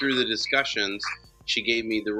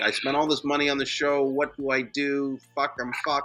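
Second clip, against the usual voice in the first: mock sobbing, high, tearful crying, near tears; 5 semitones higher than usual. Retelling a customer's call about lost money: imitating someone crying. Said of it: "she was, like, crying".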